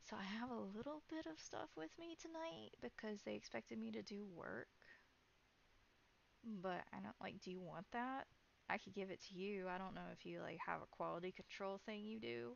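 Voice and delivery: hushed, soft half-whisper, close and leaning in. Voicing a character who leans over to a player: half-whispering. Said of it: "she's gonna lean over and whisper".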